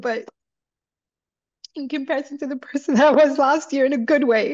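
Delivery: emotional happy-tears talk. Talking to the host about how much she has changed, emotional with happy tears. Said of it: "These are happy tears".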